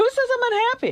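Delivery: very high-pitched, slightly angry tone. Told she seems unhappy, the speaker pushes back, a little angry. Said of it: "do sound angry".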